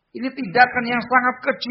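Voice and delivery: high-pitched, angry preaching delivery.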